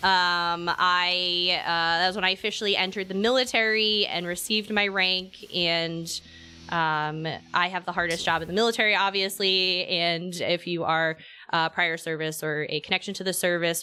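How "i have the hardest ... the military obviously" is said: ordinary delivery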